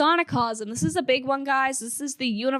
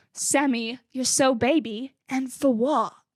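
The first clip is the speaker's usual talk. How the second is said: put-on slow, heavily laid-on British accent. Quoting a fan question the way it was said: imitating a very british accent. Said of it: "And I say it like that because Jake, A K A Oliver Reed, says it in a very British accent".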